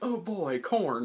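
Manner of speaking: put-on big, high-pitched sarcastic cheer. Retelling a cartoon farmer chicken's line: imitating a big sarcastic exclamation. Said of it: "real big and sarcastically".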